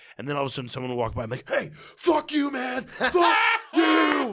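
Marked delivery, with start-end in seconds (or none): 1.5-4.3 put-on, very high, very slow, drunken furious voice. Retelling being drunk at a Halloween party, re-enacting drunken rage at passersby. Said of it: "taking out all my rage".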